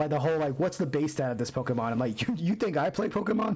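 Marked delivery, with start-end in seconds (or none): 2.2-3.6 high voice breaking and cracking. Complaining about very specific pokemon quiz questions, voice cracking. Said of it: "my voice cracked".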